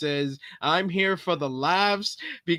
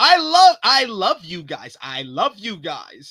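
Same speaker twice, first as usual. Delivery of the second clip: loud, slow, insincere, unconvincing affectionate gushing; 2 semitones higher, 7 dB louder than usual. Retelling a first promo back, not believing the words: imitating CM Punk's insincere promo. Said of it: "You sound like C M Punk when he was like".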